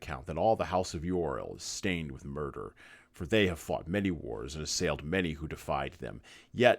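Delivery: ordinary delivery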